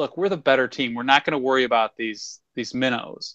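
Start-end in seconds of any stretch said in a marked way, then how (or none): none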